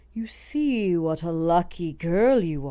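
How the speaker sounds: low and close voice. A goblin smiles at a girl with trembling hands and speaks, low voice. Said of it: "he said in a low voice".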